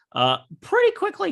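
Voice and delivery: sudden voice crack.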